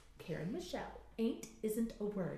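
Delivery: put-on British accent. Quoting a grandmother from childhood: British accent, imitating grandmother. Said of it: "In her British accent".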